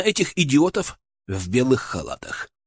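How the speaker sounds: plain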